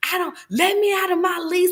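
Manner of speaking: imitated scream. Retelling lying hurt on the floor, imitating her own screaming. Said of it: "I'm just screaming like".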